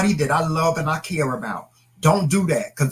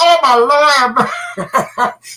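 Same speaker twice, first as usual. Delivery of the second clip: put-on slow, unhurried, lingering, drawn-out exclamation; 10 semitones higher, 5 dB louder than usual. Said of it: "Everybody still like".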